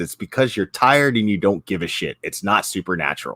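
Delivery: ordinary talk, nothing marked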